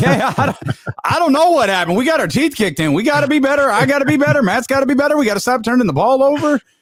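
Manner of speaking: very high, chipper, rushed, rattled-off delivery. Imitating a head coach at the podium after a loss: imitating Sean McVay, chipper and fast. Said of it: "Sean McVay was damn near chipper".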